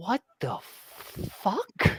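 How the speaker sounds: hushed, whispered mutter under the breath. Narrating how the Lord Protector reacts as you walk past, muttered under her breath. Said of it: "you can almost hear under her breath".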